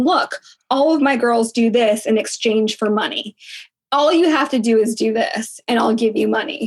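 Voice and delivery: ordinary delivery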